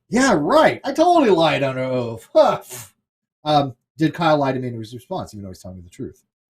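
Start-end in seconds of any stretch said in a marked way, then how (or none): 0.1-2.2 heavy, loud, mocking, sing-song sarcasm. Speaker giving an example of a person answering whether he lied under oath: sarcastic. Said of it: "rolls his eyes and says sarcastically".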